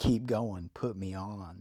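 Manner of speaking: ordinary delivery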